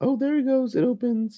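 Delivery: very high, giddy, excited head-voice falsetto, swooping. Calling out the moment the line opens: excited falsetto. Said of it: "What was that falsetto?".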